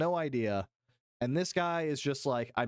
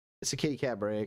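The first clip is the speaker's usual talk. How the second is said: ordinary talk, nothing marked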